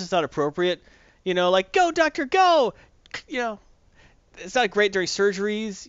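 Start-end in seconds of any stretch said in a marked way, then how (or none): 1.7-2.7 very high, loud, rah-rah cheering. Acting out cheering on a doctor during surgery: mock cheering. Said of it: "there are times cheering not helpful".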